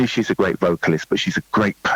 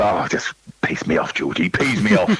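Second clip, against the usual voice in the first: lively, animated, swooping sing-song delivery. Retelling a friend's complaint about the high parts: imitating Deborah.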